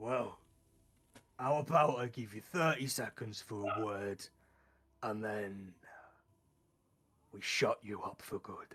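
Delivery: put-on low snow ogre monster voice. A storyteller voices a snow ogre confronting intruders in its castle, in a snow ogre voice. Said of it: "Sort of a snow ogre".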